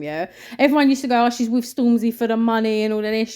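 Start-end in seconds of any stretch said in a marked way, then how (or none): none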